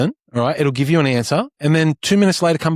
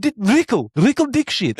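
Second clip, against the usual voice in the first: proud, beaming, pitched-up delivery; 5 semitones higher than usual. Retelling how a father introduced his son to a stranger: imitating a proud father. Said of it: "he's very proud of his son's name".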